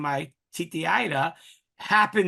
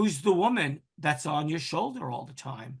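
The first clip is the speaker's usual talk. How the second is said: ordinary talk, nothing marked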